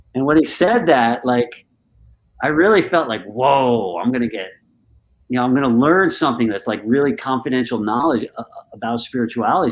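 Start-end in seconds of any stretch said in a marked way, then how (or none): none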